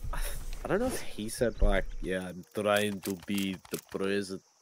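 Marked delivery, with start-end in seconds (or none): 2.0-4.4 put-on low voice, botched accent drifting toward Russian. Quoting a line about trying to be president: imitating Arnold Schwarzenegger, wrong accent. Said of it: "Wrong accent".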